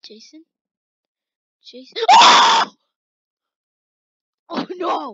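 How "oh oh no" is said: loud, wild, swooping scream of fright. Getting startled while playing, screaming in fright. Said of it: "I just screamed so loud".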